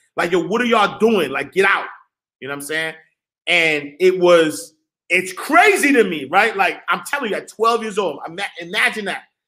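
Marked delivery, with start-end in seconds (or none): 0.4-1.9 mock heated, angry outburst. Retelling how a big homie cursed at them from a window: imitating someone cursing. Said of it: "cursing at us".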